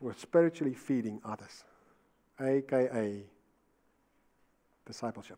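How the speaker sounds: slow, soft, deliberate, unhurried, word by word. Speaker teaching his listeners, saying it slowly. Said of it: "I'm going to say it slowly".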